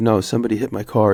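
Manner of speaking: normal talking voice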